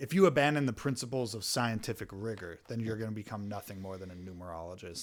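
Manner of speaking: contemptuous, superior, disdainful tone. Retelling what a film character says to Max: imitating a disdainful remark. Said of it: "And he says it with disdain".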